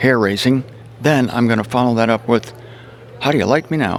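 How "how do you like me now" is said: ordinary talk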